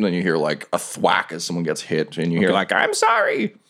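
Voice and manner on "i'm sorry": very high, shrill, squeaky goblin voice. Narrating what the players hear, voicing a goblin after a thwack: goblin voice. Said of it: "They definitely sound like goblin voices".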